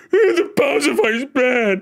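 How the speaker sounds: very slow, high, blubbering, crying whine. Mocking a viewer who keeps yelling complaints: mocking imitation of a chat user. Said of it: "that's how you sound".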